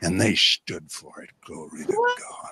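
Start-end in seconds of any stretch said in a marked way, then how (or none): 1.5-2.5 menacing, breathy, whispered sinister growl. Answering an interview question about preachers' lifestyle, growling, sinister voice. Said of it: "Why did he sound so sinister?".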